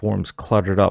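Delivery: plain reading voice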